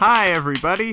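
very high, cheerful, eager and enthusiastic. Greeting the listeners after being introduced: nice and enthusiastic. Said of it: "That was so nice and enthusiastic".

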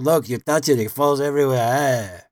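put-on old man voice with Yiddish accent. Retelling a woodworking video's complaint about French cleats: John Hines impression. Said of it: "that voice does come out".

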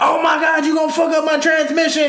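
high, frantic, fussing scolding outburst, acted. Retelling a driving lesson with mom: imitating mom yelling. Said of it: "Stop yelling at me".

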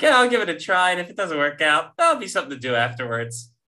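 put-on casual, offhand tone. Imitating the other speaker's plan to fight: imitating an uninvested, casual attitude. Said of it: "You're like".

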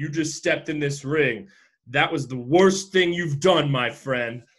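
ordinary delivery

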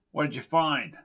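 plain

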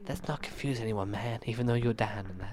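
soft, hushed, very quiet, barely audible half-whisper. Imitating a show character who just half-whispered: imitating Daniel's half-whisper. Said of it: "I love the way he whispers".

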